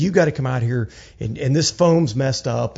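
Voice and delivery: ordinary talk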